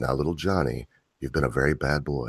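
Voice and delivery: gentle, soft, hushed female ASMR teacher voice. Describing videos where people pretend to be a teacher: female teacher voice. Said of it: "it's a female voice".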